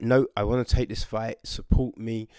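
plain

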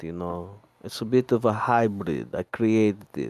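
blend of Italian and Russian accents. Speaker shows others the accent he created, Italian-Russian accent. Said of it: "This is my Italian-Russian accent".

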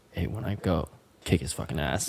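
secretive, very quiet half-whisper. Retelling what dad said to the brother: imitating someone half-whispering. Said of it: "whispered to my brother".

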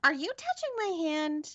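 put-on very high, creepy little stuffed-bear voice. Describing a stuffed bear that talks to spirits: creepy Boo Buddy bear voice. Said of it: "the creepiest little bear voice".

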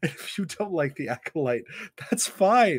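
light, high, laughing, humorous aside.

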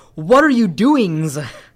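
loud shouting on every word. Retelling a story's dialogue spoken in all caps: imitating Pocky-san shouting. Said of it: "all Pocky-san's dialogue's in all caps".

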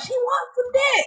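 very high-pitched, suddenly blurted-out shout. Retelling what a man yelled out during a speakerphone call, retelling a yell. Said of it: "he just decides to yell out".

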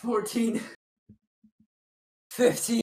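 winded, out of breath while counting. Counting reps during an exercise, winded while counting. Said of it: "are you getting winded at 15?".

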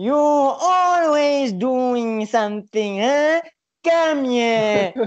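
slow, high, every syllable spelled out separately. Retelling how the woman now principal called him over: speaking in syllables. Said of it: "She still talks in syllables".

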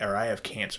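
normal talking voice

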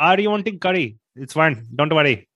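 Indian English accent throughout, fresh and full. Showing off his scottish accent to the others, it comes out as an indian accent. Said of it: "That is the most fresh Indian accent I've heard in years".

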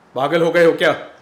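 very loud, high-pitched, reproachful scolding. Narrating a story, an elder brother stops the narrator lunging at a man again, scolding. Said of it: "भाई साहब ने डपटा".

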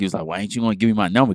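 mock-angry man's voice, acted anger. Retelling how a man in a bar reacted when refused her number, imitating an angry man. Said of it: "Got real mad".

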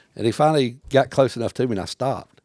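ordinary talk, nothing marked

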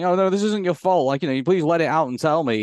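ordinary talk

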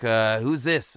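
put-on drunk man voice. Retelling a phone call, the speaker imitates a very drunk man answering: imitating a drunk man. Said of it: "he was super drunk".

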